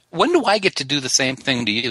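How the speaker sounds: normal talking voice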